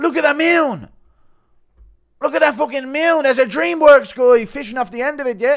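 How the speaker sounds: shrill, very loud yell, high at full volume. Pointing at Raoul's face, doing a Conor McGregor impression. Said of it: "Impression of Connor pointing at Raoul's face".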